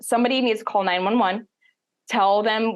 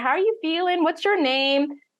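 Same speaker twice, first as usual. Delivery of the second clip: put-on nice, friendly Southern accent; 8 semitones higher than usual. Retelling what a paramedic asked during labor: southern accent. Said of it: "Very nice Southern accent".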